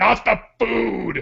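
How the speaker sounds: mock huge, big, rough, creaky voice. Retelling what someone said at the snack bar, in a booming voice. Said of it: "in the most booming voice ever".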